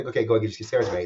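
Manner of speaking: ordinary talk, nothing marked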